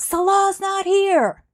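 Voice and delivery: very high, shrill, loud screaming. Retelling how someone on a live stream answered knocking at the door: imitating a scream. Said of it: "she screamed out".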